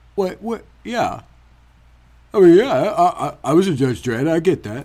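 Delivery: put-on mumbling tough-guy voice. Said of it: "Sylvester, I appreciate your effort".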